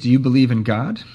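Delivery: ordinary delivery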